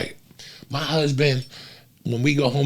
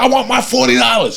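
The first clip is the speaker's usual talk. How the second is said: yelled, demanding, high-pitched outburst; 11 semitones higher, 8 dB louder than usual. Retelling a story about a man in a showroom: imitating someone yelling. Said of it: "He's yelling about his $40".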